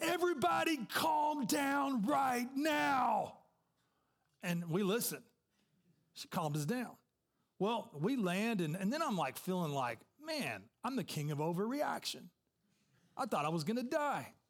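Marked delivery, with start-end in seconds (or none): 0.0-3.3 very slow, high, commanding, stretched-out scream. Retelling a turbulent flight, quoting the flight attendant, imitating someone screaming. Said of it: "The flight attendant started screaming".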